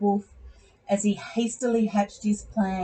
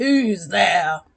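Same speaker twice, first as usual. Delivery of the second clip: husky voice calling out; 4 dB louder than usual. Reading a story where the wolf answers the knock: husky voice calling out. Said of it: "A husky voice called out".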